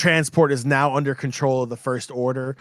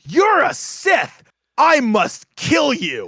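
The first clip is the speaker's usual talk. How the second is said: acted very high, shrill, swooping, drawn-out kid scream; 12 semitones higher, 4 dB louder than usual. Retelling how a kid holding a lightsaber reacted: imitating a kid screaming. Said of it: "He screams at the top of his lungs".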